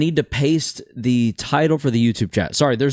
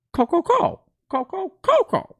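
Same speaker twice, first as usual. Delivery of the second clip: very high, drawn-out, birdlike put-on voice. Offering to say a name like the cartoon bird: Coco bird voice from Imaginary Friends. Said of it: "say it like the bird from uh, Imaginary Friends".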